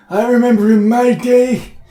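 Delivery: put-on old grandpa voice, slow and worked-up. Playing an old grandpa in a joke bit: put-on old grandpa voice. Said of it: "I worked on this voice".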